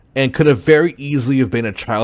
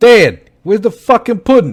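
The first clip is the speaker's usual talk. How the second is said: put-on New York accent, very high-pitched; 10 semitones higher, 8 dB louder than usual. Improvising a character calling out to his dad, new york accent. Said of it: "New York accent".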